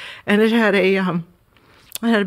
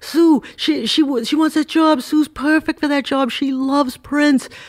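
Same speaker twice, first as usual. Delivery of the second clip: put-on Boston accent, higher pitch; 7 semitones higher, 3 dB louder than usual. Retelling what a friend said about a job opening: boston accent. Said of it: "he was the Boston accent".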